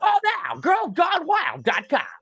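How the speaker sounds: very high, sing-song, swooping TV commercial voice. Retelling the end of a late-night TV commercial: imitating the Girls Gone Wild ad voice. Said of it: "that voice would just, like".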